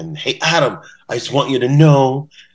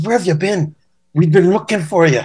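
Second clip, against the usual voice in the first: put-on raised-pitch Irish accent; 7 semitones higher than usual. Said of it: "how's my Irish accent?".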